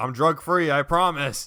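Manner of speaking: put-on insistent high-pitched yell. Recounting a persistent man who followed them across the street, imitating a man yelling. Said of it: "He's like yelling at me".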